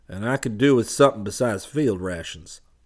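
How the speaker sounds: drawling delivery. Narrator reading the comtech's line after he wakes and stretches, drawling. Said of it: "the comtech drawled".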